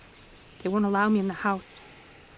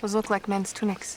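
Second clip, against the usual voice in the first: ordinary delivery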